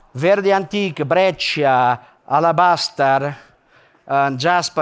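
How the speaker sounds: Italian-accented English. Speaker showing examples of stone names, in an Italian English accent. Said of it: "some Italian English accent".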